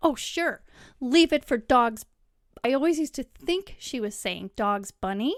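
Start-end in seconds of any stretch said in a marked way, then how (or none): 0.0-2.1 mock scornful voice, louder. Speaker recalls what mom said when the kids left a mess, mimicking mom's derogatory remark. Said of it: "in a derogatory way".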